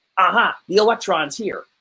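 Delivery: ordinary talk, nothing marked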